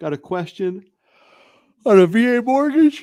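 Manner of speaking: words stretched through yawn. Moving on to the next question, yawning while talking. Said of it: "Sorry for the yawning".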